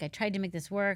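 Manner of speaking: ordinary delivery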